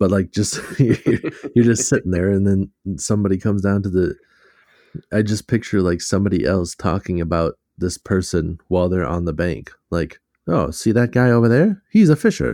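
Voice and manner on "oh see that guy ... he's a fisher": loud, high-pitched put-on old-fashioned voice. Picturing someone on the bank talking about a person, in an old-timey voice. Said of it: "here comes the old timey voice again".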